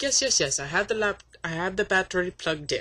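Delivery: mock Arabic-accented speech. Retelling a phone call about a laptop, quoting the caller: put-on Arabic accent. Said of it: "I'm just doing the accent".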